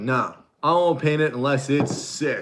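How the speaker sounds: casual, relaxed, friendly speaking voice. Imitating the painter being discussed: Josh impression. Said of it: "That's my Josh impression".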